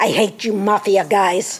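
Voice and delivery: grumbling. Retreating into his vehicle, a man speaks to another man, grumbling.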